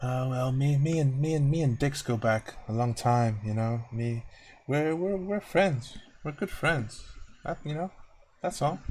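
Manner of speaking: quiet, reserved, low-key voice. Speaker voices Jasper answering a question about his involvement, quiet, reserved voice. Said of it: "quiet, reserved voice".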